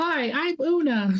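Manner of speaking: very high, girlish put-on voice. Speaker imagines how Una would introduce themselves, imitating Una's girl voice. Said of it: "in the girl voice".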